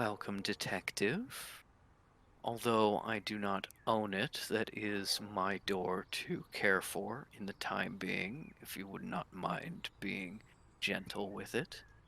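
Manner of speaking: very soft, very quiet, with a touch of venom. Voicing the abbot greeting a detective who slammed the door: very quiet with a little venom. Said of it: "very quietly, but with a little bit of venom".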